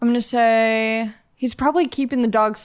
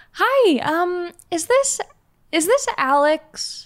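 put-on voice, much higher pitch; 7 semitones higher than usual. Role-playing a phone call to a lost dog's owner, put-on high-pitched voice. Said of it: "So I'll be a little bit more high-pitched".

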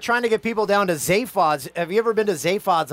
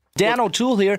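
fumbled, stumbling on-air host broadcaster voice. Introducing himself by name, trying out a broadcaster voice. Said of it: "You thought that was the broadcaster voice".

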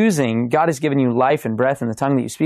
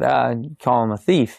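normal talking voice

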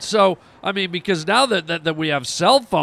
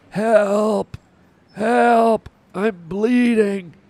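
mock weak, distressed voice, higher, much slower; 4 semitones higher than usual. Retelling a bleeding man hanging upside down calling for help, weak and distressed. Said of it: "in a very weak, distressed voice".

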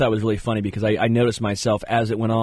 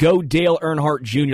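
ordinary talk

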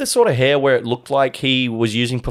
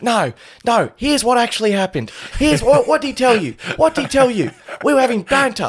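very high-pitched English man voice; 11 semitones higher than usual. Retelling a bar dispute, imitating the short English guy. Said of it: "this short Pommy guy's like".

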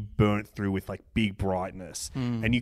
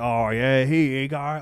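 broad thick grubby Australian accent, consonants dropped; 4 semitones higher, 4 dB louder than usual. Showing how some Australians talk, thick grubby Australian accent. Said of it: "really having that thick Dirty, grubby, dirty dog Australian accent".

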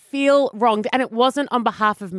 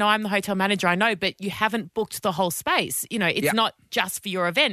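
usual speaking voice

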